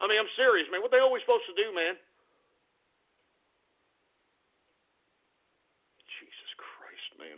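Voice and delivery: angry and flustered. Ranting about having to accept this garbage, angry, flustered. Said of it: "I'm pissed".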